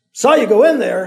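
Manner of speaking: very loud shout. An old man with a shotgun calls up the trail to Alibi, shouted. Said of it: "the man shouted".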